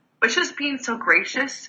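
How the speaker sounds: on the verge of tears, choked-up, pitched high. Recalling thanking a busy man for being so gracious; teary-eyed. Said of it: "I'm getting teary-eyed right now".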